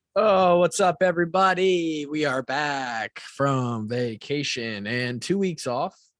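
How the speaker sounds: deliberately slowed, drawn-out dramatic delivery. Welcoming listeners back after two weeks off: talking slowly. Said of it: "I'm talking slow like this for no reason".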